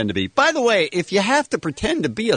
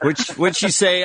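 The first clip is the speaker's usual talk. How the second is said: usual speaking voice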